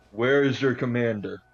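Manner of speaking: yelling out, shouting. Calling out in character to approaching guards: yelling out. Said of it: "I yell out".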